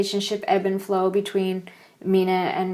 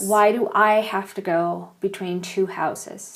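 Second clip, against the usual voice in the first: plain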